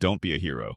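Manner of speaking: plain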